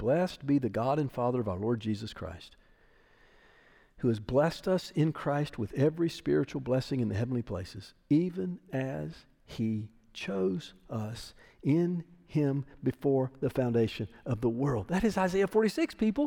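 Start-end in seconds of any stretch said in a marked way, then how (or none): 0.0-14.9 slow, unhurried, deliberate reading aloud. Speaker reads a Bible passage aloud to listeners, reading slowly. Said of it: "I'm going to read it slow".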